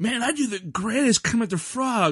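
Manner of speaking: high-pitched, eager, bragging boastful tone.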